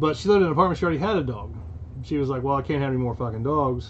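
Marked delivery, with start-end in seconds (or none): none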